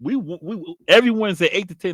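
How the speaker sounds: tripping over words excitedly. Plugging the weekly show times to listeners, excited, stuttering from talking fast. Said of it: "I'm stuttering because I'm talking so fast".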